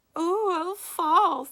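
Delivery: very high, very loud, jeering falsetto squeak. Reading a story aloud, someone mocks the humiliated girl, squeaky falsetto. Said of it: "someone squeaked in a falsetto voice".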